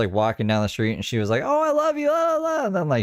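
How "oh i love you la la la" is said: put-on very high tipsy woman's voice, drunken gushing. Retelling how a drunk woman at Bike Week greeted people: imitating a drunk woman. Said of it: "she was drunk".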